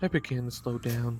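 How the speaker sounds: ordinary delivery, nothing marked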